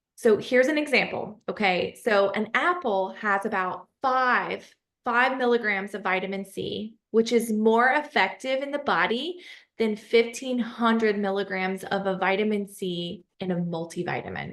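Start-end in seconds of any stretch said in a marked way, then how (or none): 2.1-14.6 very slow, drawn-out, careful, deliberate pacing. Explaining an example so listeners understand, the speaker speaks really slowly. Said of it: "I said that really slowly".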